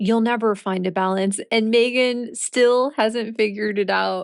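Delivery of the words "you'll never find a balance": plain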